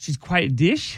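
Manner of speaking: unsure, question-like rising pitch on "dish". Repeating a phrase another speaker asked for: saying it like a question. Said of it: "he says it with a question mark".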